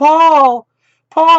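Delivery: very loud, very high, shrill, piercing scream. Retelling a story, the speaker acts out a woman screaming a man's name. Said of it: "she starts screaming his name".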